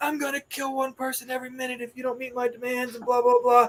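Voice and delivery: mock threatening bad guy yelling. Retelling a school bus drill where the bad guy threatens the kids: imitating someone yelling. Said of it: "he's yelling at the kids".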